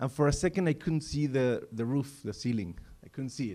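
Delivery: ordinary delivery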